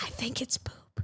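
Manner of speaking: soft, breathy, hushed, barely voiced whisper. Retelling what a swimmer said about the pool, imitating someone whispering. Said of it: "She gave me anxiety whispering".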